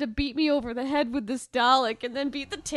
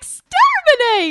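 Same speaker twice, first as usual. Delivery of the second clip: shrill, full-throated, very high, very loud yell; 13 semitones higher, 13 dB louder than usual. Retelling how a friend yelled a catchphrase: imitating Errol yelling in his own voice. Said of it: "He yelled it in an Errol voice".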